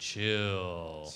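deep, soft, low voice, drawn out long. Retelling what Ty Montgomery said when things went haywire, long and deep. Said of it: "he said it really long with his deep voice".

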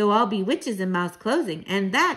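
plain reading voice

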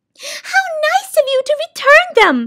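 very high, delighted, happy cry. The soundkeeper peers into the returned sack of sounds and cries happily. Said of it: "she cried happily".

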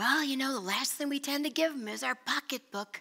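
put-on high, very English accent. Asking listeners to give, quoting a saying in Stuart Briscoe's English accent. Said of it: "in a very English little accent".

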